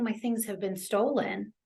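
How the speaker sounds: ordinary talk, nothing marked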